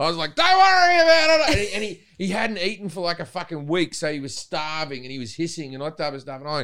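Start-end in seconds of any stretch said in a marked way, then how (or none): 0.3-1.7 exaggerated, slow Australian drawl, very loud and high. Retelling how you dealt with an escaped snake, in a very Australian Steve Irwin voice. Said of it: "the most Australian I've ever been".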